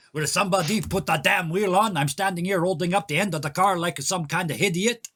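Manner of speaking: put-on French Canadian accent. Voicing a character holding up a car: french canadian accent. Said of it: "I'm just gonna do the French Canadian accent".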